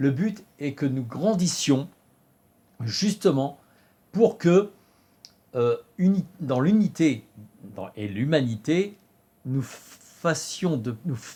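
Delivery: fumbling and halting, restarting the phrase. Speaker at the end of the day, stumbling over words. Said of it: "je bafouille".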